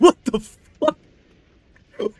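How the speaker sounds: shrill, very loud, very high exclamation laughed through. Reacting to something just read, laughing while talking.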